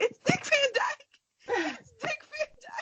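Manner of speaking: put-on starstruck squeal, very high-pitched and excited. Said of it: "I just kept screaming".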